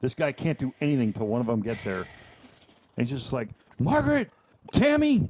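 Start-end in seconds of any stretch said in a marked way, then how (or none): 3.8-5.3 play-acted, very high-pitched shouted yell. Retelling how a cashier kept calling for coworkers: imitating someone yelling names.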